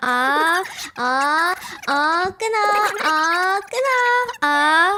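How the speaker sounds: high, stretched-out, drawn-out Korean-style "ah ah". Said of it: "That's why the Koreans do the".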